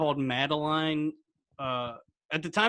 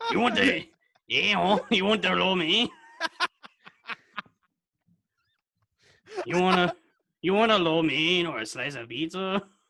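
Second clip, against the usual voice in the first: fumbling attempt at fake Chinese-Mexican accent; 3 semitones higher, 3 dB louder than usual. A speaker tries to find the accent, in a put-on accent attempt. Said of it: "I was trying to figure out the accent".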